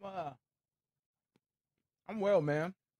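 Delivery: speech through a mouthful. Asked by the host how you are doing, answer while eating. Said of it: "Apologize eating broccoli".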